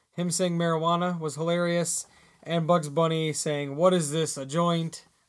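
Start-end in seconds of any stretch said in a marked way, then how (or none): none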